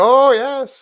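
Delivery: very loud, very high, booming put-on Irish accent. Imitating a Kansas kid interviewed after a win: put-on Irish accent. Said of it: "That was a pretty good "Oh".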